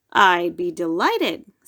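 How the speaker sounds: pleasant, nice deep voice. A principal answers a boy who invited him to a party, nice deep voice. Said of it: "in his nice deep voice".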